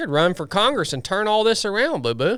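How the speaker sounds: sarcastic sing-song. Suggesting someone run for office to fix things: sarcastic. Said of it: "I was being sar-, sarcastic on all of that".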